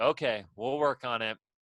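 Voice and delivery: put-on disappointed tone. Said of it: "you just hear his tone change".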